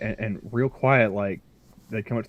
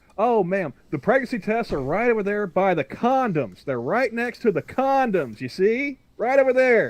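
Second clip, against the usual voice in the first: very loud, high, booming top-of-the-lungs call; 11 semitones higher than usual. Retelling what you said to a woman, re-enacting speaking very loud. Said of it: "just as loud as I could".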